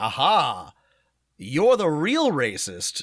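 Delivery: very slow, sonorous, pompous, triumphant delivery. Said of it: "now I'm talking like the arch, arch whatever is".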